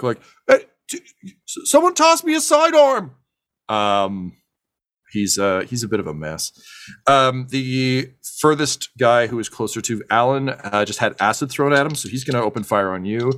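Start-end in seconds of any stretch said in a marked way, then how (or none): 0.5-3.2 shrill, high, loud, stammering yell. Narrating a fight, the speaker voices a man yelling from across the box: yelling back. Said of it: "he just yells back".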